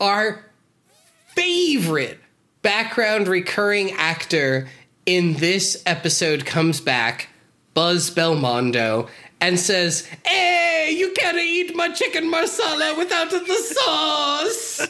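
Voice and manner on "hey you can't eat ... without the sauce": very high, shrill, over-the-top fake Italian chef accent. Recapping an episode, quoting a recurring background actor: over-the-top bad italian chef accent. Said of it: "does a really over the top bad Italian chef impression".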